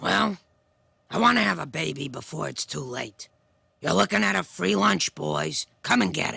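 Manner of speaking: raspy, put-on woman's voice. Responding to someone apologizing for their raspy voice, doing Selma from The Simpsons. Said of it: "Selma from The Simpsons".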